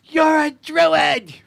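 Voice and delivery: shrill, very high yell. Narrating a scene where a figure looks up at you: yelling up. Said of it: "yells up at you".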